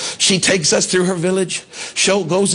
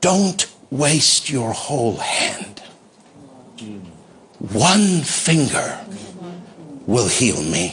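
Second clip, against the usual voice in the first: hushed, faint, barely heard words; 6 semitones lower than usual. The speaker retells the words a woman said to them, really quietly. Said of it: "really quietly".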